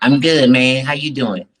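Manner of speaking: loud, high, squeaky put-on helium voice. Co-host answering the show's opening greeting in a squeaky helium voice. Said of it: "J T swallowed some helium today".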